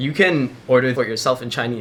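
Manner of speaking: usual speaking voice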